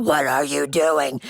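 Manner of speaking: strange, unsettling, low, weird, scary voice. Retelling how their mom reacted on finding them covered in cake: imitating mom's weird voice. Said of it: "They actually get a weird voice".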